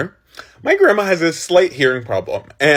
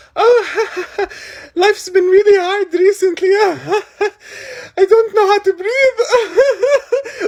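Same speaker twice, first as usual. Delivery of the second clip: mock very high, nervous, drawn-out giggles through words. Imitating an auntie who giggles when distressed: imitating someone giggling while talking. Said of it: "she's smiling and laughing, like, giggling".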